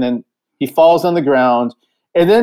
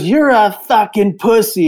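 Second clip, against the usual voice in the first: light, high, mildly screamed taunting tone; 5 semitones higher than usual. Retelling a man who got up from his seat to confront them, imitating him screaming. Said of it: "and just starts screaming at me".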